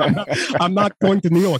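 put-on New York accent. Joking about a politician's houses: Bernie Sanders impression. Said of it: "he keeps the New York accent".

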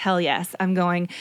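plain

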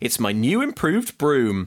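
ordinary talk, nothing marked

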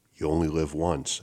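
ordinary delivery

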